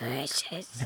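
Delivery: very quiet, hushed character voice under the breath. Joking about a little Schmeagle, answering in his voice: Smeagol voice.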